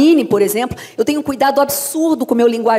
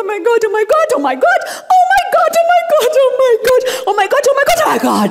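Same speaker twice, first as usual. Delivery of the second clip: mock sobbing and laughing, higher pitched; 13 semitones higher than usual. Retelling a dubbing scene, repeating the character's line: imitating crying and laughing. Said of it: "Chorando, rindo".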